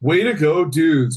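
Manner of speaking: mock dry, slow, almost sarcastic delivery. Retelling reluctantly saying a scripted line, imitating own half-sarcastic delivery. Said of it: "almost sarcastically".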